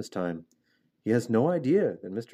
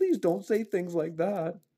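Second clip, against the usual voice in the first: high, pleading groan; 8 semitones higher than usual. Narrator reads Wilbur answering Charlotte the spider; groaning. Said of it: "groaned Wilbur".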